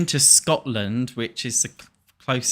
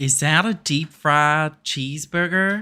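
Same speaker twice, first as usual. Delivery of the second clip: fake, higher-pitched put-on American accent; 5 semitones higher, 4 dB louder than usual. Trying out an American accent for listeners, in a put-on American accent. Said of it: "Can you hear me try to do an American accent?".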